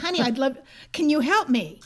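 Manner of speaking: acted speaking loudly. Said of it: "Now I'm speaking loudly".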